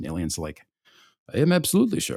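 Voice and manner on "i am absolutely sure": bad, clumsy, high Swedish accent. Acting out the answer to Penske asking whether he is sure, in a bad Swedish accent. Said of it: "Sam cannot do a Swedish accent".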